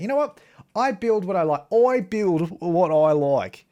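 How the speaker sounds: really strong, heavy put-on Australian accent. Touring a build they made to their own taste, in a strong australian accent. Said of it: "I don't know why I'm doing a really strong Australian accent".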